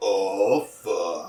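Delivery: deep, put-on porn-actor voice. Retelling someone's impression: impression of a man in porn. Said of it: "an impression of a man in a porn".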